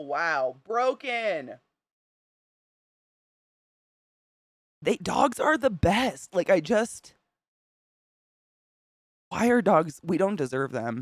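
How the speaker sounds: crying speech, very slow, high and drawn out. Reacting to a video of happy dogs, crying. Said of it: "I'm crying".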